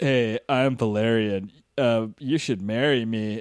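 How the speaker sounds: very slow, charisma-free, dragged-out delivery. Mocking the actor playing Valerian with zero charisma: imitating Dane DeHaan, no charisma. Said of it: "And Dane DeHaan's just like".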